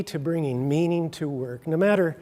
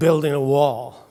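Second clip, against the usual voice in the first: mock-grumpy, acted-out grumpy man voice; 3 semitones lower, 4 dB louder than usual. Telling a parable of three wall builders, the first man answering in a grumpy voice. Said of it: "said in a grumpy voice".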